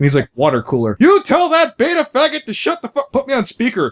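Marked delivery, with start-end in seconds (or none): 1.0-3.9 mock, very high, shrill, swooping screaming rant. Retelling a friend on Skype in the aisle: imitating someone screaming. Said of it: "he's screaming at the guy".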